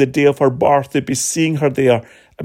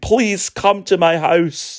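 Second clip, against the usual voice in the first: mock pleading, slower; 3 semitones higher than usual. Speaker retells a synagogue leader falling at someone's feet, acting out his plea. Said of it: "He pleads with them in front of everybody".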